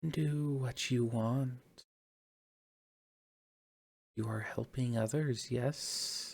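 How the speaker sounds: soft, whispery, airy, ethereal, otherworldly voice. In a tabletop game, speaker voices a voice responding to the players: whispery, ethereal voice. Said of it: "A whispery, ethereal voice responds back".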